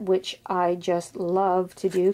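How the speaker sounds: heavy sarcastic drawl, very slow and drawn out. Describing fussy cutting small paper shapes by hand: sarcastic tone. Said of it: "Can you hear the sarcasm in my voice?".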